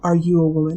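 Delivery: gentle, soothing voice. Retelling a stranger's question on the street: retelling a very soft voice. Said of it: "the man asked in his soft, soft voice".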